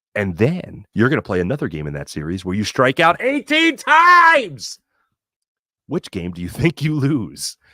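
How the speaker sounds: dramatic sports documentary narrator voice with swooping pitch. Speaker poses a baseball hypothetical in 30 for 30 narrator voice. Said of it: "let's go with the thirty for thirty voice".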